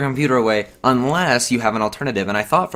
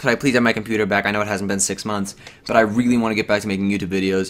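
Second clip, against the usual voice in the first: ordinary talk, nothing marked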